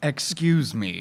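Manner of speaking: mysterious, disembodied voice. Voicing a psychic presence heard in a character's head: deep bassy voice. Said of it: "you hear a deep, bassy voice in your head".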